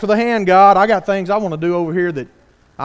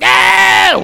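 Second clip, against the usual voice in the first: put-on baby voice yelling, higher, louder; 12 semitones higher, 7 dB louder than usual. Describing a store scene, acting out the baby answering its mother: imitating a baby yelling no. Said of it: "the baby's over there going".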